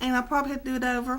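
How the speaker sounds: talking very fast, rattled off.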